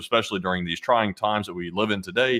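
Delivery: plain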